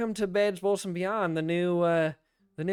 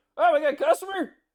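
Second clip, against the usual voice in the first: shrill, very high, loud yell; 10 semitones higher, 6 dB louder than usual. Voicing a shop worker calling from the back as customers enter: yelling from the back. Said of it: "you hear someone yell back".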